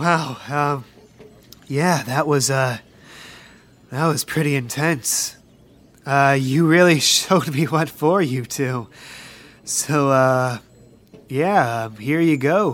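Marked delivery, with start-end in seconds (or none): 0.0-8.9 exhausted, worn-out voice, lower. Voicing a gym leader worn out after a battle: worn out and sweating. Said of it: "sweating very hard, very worn out".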